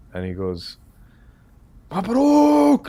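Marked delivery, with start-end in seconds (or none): 1.9-2.8 very high, shrill, loud screaming. Retelling a friend's phone call with good news: imitating a friend screaming. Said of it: "He's screaming".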